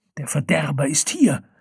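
hissed, sibilant words. The shaman speaks while gripping Farodin's neck, hissing. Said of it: "zischte die Schamanin".

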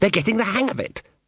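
high-pitched hissing. Reading a character watching actors and hushing a companion, hissed. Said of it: "he hissed".

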